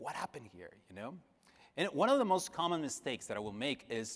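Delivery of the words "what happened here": bewildered, frightened, confused and scared tone. Retelling the boss asking about the print job: imitating the boss sounding confused and afraid. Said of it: "very confused and very afraid".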